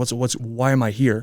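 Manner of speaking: mock-angry rant. Recalling a family blowup, the speaker quotes their dad: imitating an angry outburst. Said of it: "and he's really pissed off".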